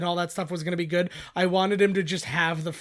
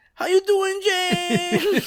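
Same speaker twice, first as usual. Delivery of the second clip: very high, loud, drawn-out voice; 13 semitones higher, 6 dB louder than usual. Playing a guest on an interview show: Rosie Perez voice. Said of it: "It's all Rosie Perez".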